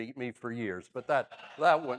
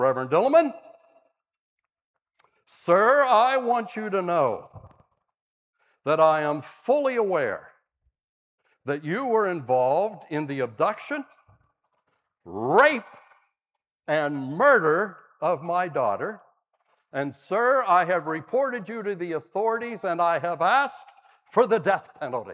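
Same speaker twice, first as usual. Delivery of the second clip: thunderous, loud and booming pronouncement; 4 semitones higher, 6 dB louder than usual. Retelling a man addressing him in a hallway outside the sanctuary, thunderous voice. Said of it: "In a thunderous voice".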